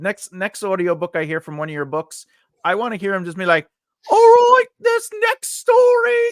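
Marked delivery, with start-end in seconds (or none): 4.1-6.2 squeaky, high-pitched put-on voice, higher and louder. Imitating an audiobook narrator reading in a silly voice: high-pitched put-on voice. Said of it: "I just want that high voice".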